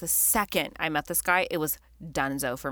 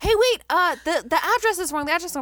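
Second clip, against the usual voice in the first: mock shouting, higher pitch and louder; 12 semitones higher, 5 dB louder than usual. Retelling a drunk night, the speaker acts out a man in an Uber screaming out the window. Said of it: "he's like screaming out the window".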